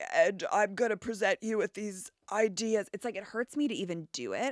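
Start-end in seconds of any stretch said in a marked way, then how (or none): 0.1-2.9 put-on deep baritone voice. Imitating how a woman speaks in public: imitating her deep baritone voice. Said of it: "This deep baritone manufactured voice".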